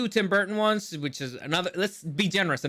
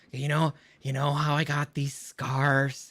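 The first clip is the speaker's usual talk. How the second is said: sinister, threatening delivery in a menacing villain voice; 3 semitones lower than usual. Reading a Batman script aloud, the speaker tries a Heath Ledger Joker impression. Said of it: "I'm gonna be trying doing Heath Ledger".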